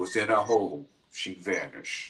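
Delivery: deep, raspy, very slow, drawn-out narrating voice. Retelling a scary show intro: Robert Stack voice. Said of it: "That deep, raspy voice".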